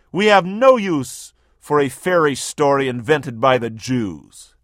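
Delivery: normal talking voice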